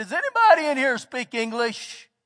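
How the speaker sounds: put-on full-lung shout. Retelling calling out among hundreds of kids: imitating shouting at the top of his lungs. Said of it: "I just say as top of my lungs that I can".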